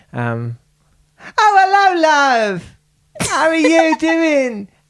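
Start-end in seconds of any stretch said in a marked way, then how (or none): 1.3-4.6 very high Essex accent with "love" stretched out. Asked to do an essex accent, trying an essex accent. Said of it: "I'll try the Essex".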